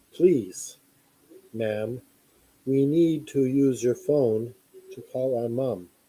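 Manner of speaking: flat, level, expressionless monotone voice. Retelling what kids said when a woman opened her door, flat monotone voice. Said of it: "they say in the the monotone voice".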